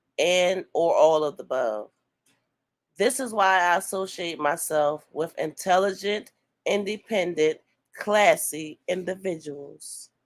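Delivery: ordinary delivery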